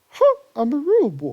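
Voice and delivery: bad, shrill, very high, very loud put-on boy voice. Animating a card in the game and voicing it: horrible put-on voice. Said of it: "Slash did with my voice".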